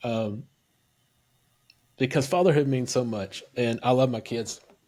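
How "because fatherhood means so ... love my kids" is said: choked-up voice, on the verge of tears. Thanking another speaker for his work with kids, choked up. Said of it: "I'm starting to get choked up".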